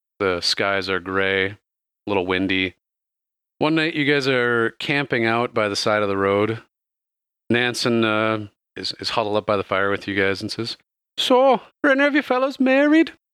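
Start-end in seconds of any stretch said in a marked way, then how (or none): 11.2-13.1 put-on slight Irish accent at very high pitch. Storyteller voicing Nansen huddled by the fire with the party, slightly Irish. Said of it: "Now it sounds a little bit more Irish".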